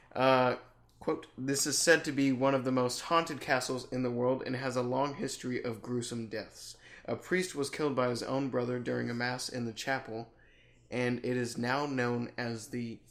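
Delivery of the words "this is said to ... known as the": ordinary delivery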